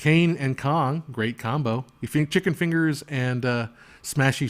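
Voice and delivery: ordinary talk, nothing marked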